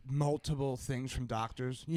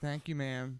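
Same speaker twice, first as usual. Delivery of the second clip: dry, sarcastic, mocking tongue-in-cheek politeness. Showing how they address a twenty-something: sarcastic.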